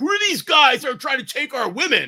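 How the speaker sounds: mock angry, very high rant. Recalling security guys at the queue lines, imitating angry security guards. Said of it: "all the security dudes would be like angry".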